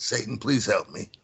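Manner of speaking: mumbling under breath. Recounting a plea they did not want to yell out, retelling muttering under breath. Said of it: "kind of like under my breath a little bit".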